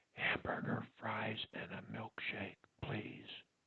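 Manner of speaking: whispering. Leading a speech drill, saying a food order in a whisper. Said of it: "Now let's do it in a whisper".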